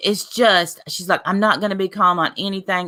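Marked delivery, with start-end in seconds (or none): none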